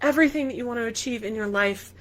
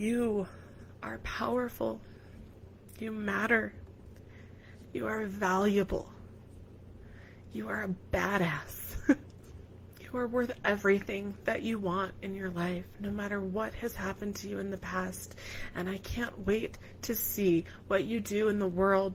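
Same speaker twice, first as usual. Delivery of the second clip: soft, tearful, speaking through tears; 8 dB quieter than usual. Giving a last message to listeners while trying to stop crying, crying. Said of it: "I really want to stop crying before I say this last word".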